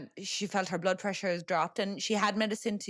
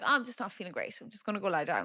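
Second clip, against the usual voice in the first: put-on, airy, sing-song, casual, cool and unbothered. Retelling how an aunt excused herself from the campfire: imitating someone playing it cool. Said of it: "she plays that very cool".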